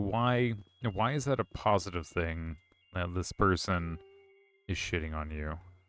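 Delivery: ordinary talk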